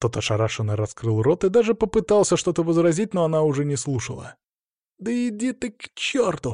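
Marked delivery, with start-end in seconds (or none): 5.0-6.5 very high, slow outburst. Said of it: "донёсся до меня её высокий голос".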